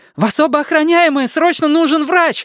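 high-pitched, very high shouting. Calling out to two armed guards who have just run in, shouting. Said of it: "закричала Сага".

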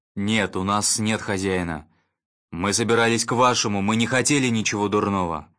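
plain reading voice

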